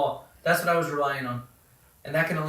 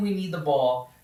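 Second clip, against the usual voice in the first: ordinary talk, nothing marked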